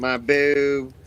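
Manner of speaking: put-on Kentucky accent. Imitating Quentin saying a line: imitating Quentin's Kentucky accent. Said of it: "hearing his Kentucky accent. He's like".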